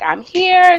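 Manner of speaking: high, loud, proud, hyped announcing voice. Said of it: "I was like".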